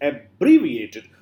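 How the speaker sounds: abbreviated with second syllable bre stressed. English pronunciation lesson on emphasis: abbreviated stressed on second syllable. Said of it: "Abbreviated on the uh, on the word ba".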